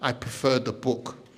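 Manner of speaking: soft, proper, put-on posh accent. Mocking people who walk out of the cinema, in a posh voice. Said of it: "Proper posh".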